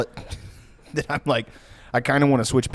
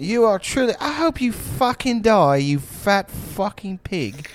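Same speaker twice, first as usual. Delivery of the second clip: put-on insulting judge voice, higher pitch; 9 semitones higher than usual. Imitating a judge insulting a contestant: imitating Simon. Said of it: "And then Simon would be like".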